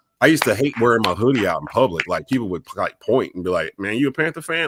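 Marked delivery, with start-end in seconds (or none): 3.8-4.7 put-on open disgust, pitched up, jabbing. Speaker retells how people reacted to their Panthers hoodie, imitating a disgusted tone. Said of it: "they'd say it like in disgust".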